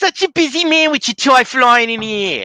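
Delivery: put-on thick Jersey accent, very high pitch, loud. Retelling what a former coworker used to say: imitating a coworker's heavy Jersey accent. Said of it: "if you ever think I have a heavy Jersey accent".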